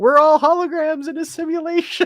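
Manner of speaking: high, loud mocking voice.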